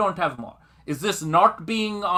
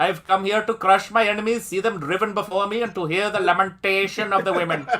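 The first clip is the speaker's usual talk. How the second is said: put-on accent from India. Riffing on accents in a Bollywood movie, Indian call-center accent. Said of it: "The phone center accent".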